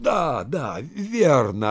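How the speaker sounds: lively, bright, animated, high, swooping voice. The host answers his visitor, who points to the address on the letter, animated. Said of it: "оживленно заговорил хозяин".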